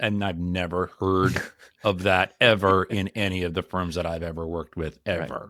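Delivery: dry sarcasm, meaning the exact opposite. Reacting to complaints that partners keep delaying meetings: sarcastic. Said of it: "And I'm being sarcastic here".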